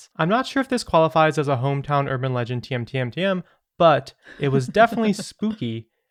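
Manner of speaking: plain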